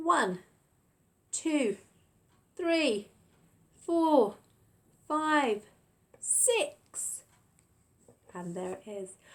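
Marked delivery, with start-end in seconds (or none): 0.0-7.2 big, very deliberate, slow, loud shout, pitched up. Counting aloud with the nursery class to check an answer: shouting numbers. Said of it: "Shout out those numbers for me".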